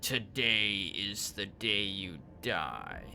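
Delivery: taunting inhuman voice. Reading a story, a voice comes over the transmission to the officers; mocking, inhuman voice. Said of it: "A mocking, inhuman voice giggles hysterically".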